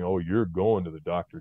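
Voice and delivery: plain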